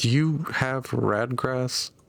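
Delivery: private, close, slow, confidential tone. A narrator voicing a character who leans over to another amid artillery fire, in a hushed tone. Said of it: "in a hushed tone".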